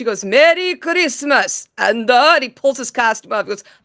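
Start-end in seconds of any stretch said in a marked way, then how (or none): 0.2-1.7 put-on intimidating hero voice. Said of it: "Being all intimidating".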